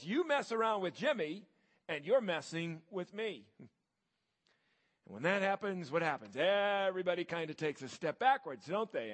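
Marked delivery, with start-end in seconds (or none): 0.0-3.4 mock, menacing, intimidating big-kid voice. Telling a story, a big kid squares off to defend a ridiculed kid, imitating an intimidating voice. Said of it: "says in a very intimidating voice".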